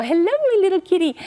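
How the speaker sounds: very high-pitched, sweet little voice. Advising how to coax a frightened cat out from under the bed: high voice. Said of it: "speak in a high voice".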